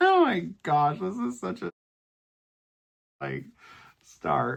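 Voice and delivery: laughing while talking. Showing a craft project, laughing while talking. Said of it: "I need to stop laughing".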